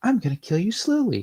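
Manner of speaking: put-on very high, clean, happy, angelic child voice. Game master voicing a voice in a player's head, happy, childlike angelic voice. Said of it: "A very happy, childlike voice. A very clean, angelic sounding voice that says".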